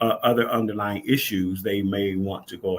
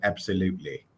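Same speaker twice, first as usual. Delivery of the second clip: mimicked fake British accent, quieter; 4 dB quieter than usual. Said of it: "She put on a British accent".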